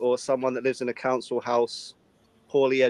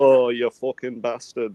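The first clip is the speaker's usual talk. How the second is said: northern English chav accent; 3 dB louder than usual. Describing regional chav speech, imitating a northern chav accent. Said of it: "the northern ones will be like".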